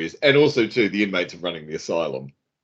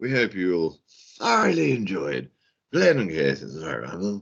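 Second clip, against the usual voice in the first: soft, fake, very very British accent; 5 dB quieter than usual. Signing off the show to listeners in a put-on very British accent. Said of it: "I don't know what accent this is".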